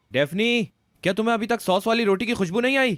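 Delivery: loud high shouting. Calling out to Daphne after telling Grandma not to worry, loud shouting. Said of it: "इतनी जोर जोर से चिल्ला रहे हो".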